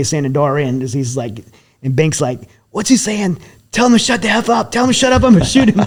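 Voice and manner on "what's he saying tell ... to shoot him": frantic, freaked-out, very high-pitched outburst. Retelling a man holding a pistol to another's head, imitating him freaking out. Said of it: "He's like freaking out in the car".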